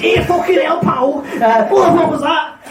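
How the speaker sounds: put-on high, shouted Scouse copper accent. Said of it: "Scouse police".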